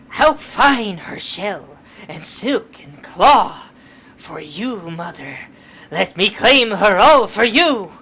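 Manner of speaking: loud, theatrical, dramatic villain declamation. Playing a game, voicing the boss in a dramatic villain voice. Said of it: "when I do this voice".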